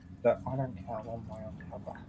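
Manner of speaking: barely audible, very quiet whisper. A character leans in to another character's ear, whispering. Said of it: "You're whispering so much that we can't hear you".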